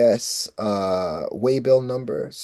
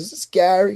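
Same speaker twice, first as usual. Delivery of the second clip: put-on American accent, pitched up; 8 semitones higher than usual. Retelling a phone call, the speaker voices the producer lady; put-on american accent. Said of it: "I remember the American accent".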